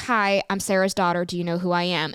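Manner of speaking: ordinary talk, nothing marked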